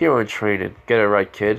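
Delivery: ordinary delivery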